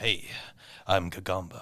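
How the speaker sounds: epic, seductive delivery. Retelling an episode's opening monologue: seductive Gagamba monologue impression. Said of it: "epic, like, seductive-esque, like, Gagamba, like, monologue".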